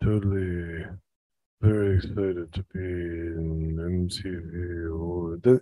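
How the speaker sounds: snooty, self-important, low, hushed pretentious voice. Answering a question about an awards-show comeback, in a put-on pretentious voice. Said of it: "with my pretentious voice".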